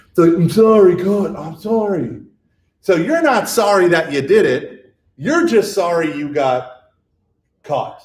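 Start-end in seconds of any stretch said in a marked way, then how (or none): 0.3-2.3 put-on drawn-out, exasperated, annoyed kid voice. Imitating kids who roll their eyes when caught: imitating an eye-rolling kid's apology. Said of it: "they roll their eyes".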